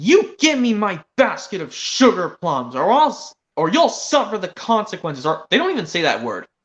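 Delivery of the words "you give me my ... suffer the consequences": stern, firm, unyielding tone. Retelling a scene where Cassie stands up to Spikes, retelling a stern demand. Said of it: "standing up sternly".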